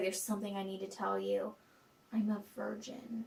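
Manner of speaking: soft, hushed, quiet, mock solemn and serious tone.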